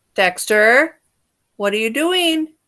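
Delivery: very loud, sudden yell at full volume. Demonstrating calling out to someone who has gone quiet, yelling. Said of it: "I'm going to yell it".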